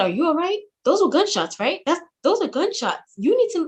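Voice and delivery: acted, very high, rushed, rattled-off, panicked voice. Retelling own words on the phone after hearing gunshots: imitating past panic. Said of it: "I'm panicking a little bit over the phone".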